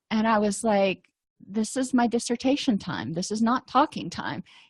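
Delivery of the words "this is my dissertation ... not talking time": plain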